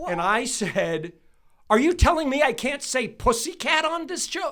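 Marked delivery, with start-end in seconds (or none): 1.7-4.5 very high, very loud, shrill, furious voice. Retelling what they said when confronting her, retelling an angry confrontation. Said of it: "And I went at her".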